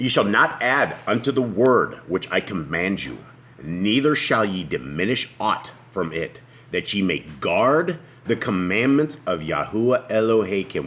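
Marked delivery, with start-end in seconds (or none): none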